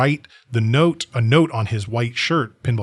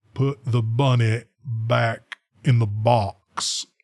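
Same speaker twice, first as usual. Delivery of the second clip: very slow delivery, every word drawn out. Quoting the best line in the movie: Cameron Poe impression. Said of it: "a Cameron Poe impression".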